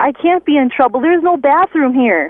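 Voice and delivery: put-on acted shrieking child at the top of his lungs. Retelling a small nephew's outburst in a quiet church: imitating a child screaming. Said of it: "at the top of his lungs, he screams".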